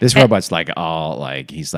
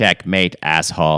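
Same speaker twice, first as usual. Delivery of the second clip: put-on robotic voice. Saying how a robot should sound when it talks: robot voice. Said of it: "It should talk in a robot, robot voice".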